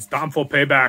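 loud, punchy, bad Austrian action-hero accent. While commenting on a shooting, doing an Arnold Schwarzenegger voice. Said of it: "That was a terrible Arnold Schwarzenegger impersonation".

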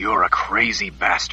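quiet, contemptuous tone. Narrating a crooked-toothed criminal's taunt at Oba, quiet and contemptuous. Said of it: "said in a quiet voice, filled with contempt".

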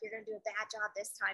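secretive, barely audible, very quiet half-whisper. Retelling a half-whisper to a kid during a handstand demo: imitating her own half-whisper. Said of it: "I gotta whisper to him".

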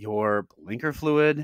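mock, imitated patronizing, condescending tone. Retelling how a woman answered the man at the front desk: mock-patronizing tone. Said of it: "and really like patronizingly".

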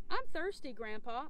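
usual speaking voice

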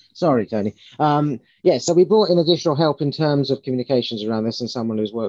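speaking up.

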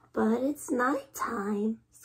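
squeaky, squeaked. Reading a young bat's reply in a children's story: squeaked. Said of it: "squeaked Stellaluna".

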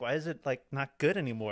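ordinary talk

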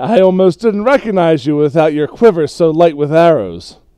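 very loud, through a chuckle. A game master voices a figure who stops a player's character from behind: chuckling. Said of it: "you hear a voice start to chuckle and say".

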